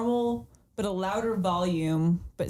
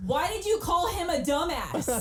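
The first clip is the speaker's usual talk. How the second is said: very high-pitched mock scolding yell; 10 semitones higher than usual. Acting out yelling at work: imitating a yell. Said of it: "why are you yelling at me?".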